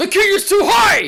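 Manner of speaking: high, loud screamed outburst. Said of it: "he screams at".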